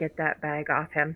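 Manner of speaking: whispering. Whispering to a companion in a game scene: whisper. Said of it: "and I wanna whisper".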